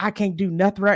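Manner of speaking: acted-out, upset, crying outburst through tears. Retelling what he said leaving the therapy session: imitating someone crying. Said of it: "upset, punching the air, crying".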